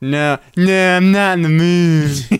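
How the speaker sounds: put-on voice of a girl. Quoting one of two girls watching street rappers, as an impression of her. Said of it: "That was a really good impression".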